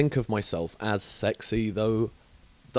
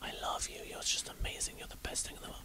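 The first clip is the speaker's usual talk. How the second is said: very quiet, soft, intimate whisper. Speaker demonstrating what sweet nothings are, whispering sweet nothings. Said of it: "I'm just whispering sweet nothings".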